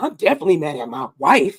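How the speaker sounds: rough, raspy little voice. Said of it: "with his little raspy voice".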